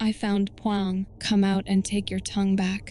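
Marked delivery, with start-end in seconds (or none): none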